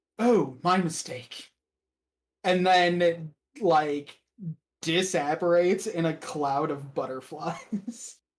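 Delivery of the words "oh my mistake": ordinary, pleasant tone of voice. A bodiless figure leans in close to the player, regular, pleasant voice. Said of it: "in like a regular, pleasant voice".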